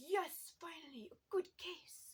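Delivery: put-on terrible French accent, high and loud. Retelling a book's plot, voicing Hercule Poirot: terrible Hercule Poirot French accent. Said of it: "that was a terrible French accent".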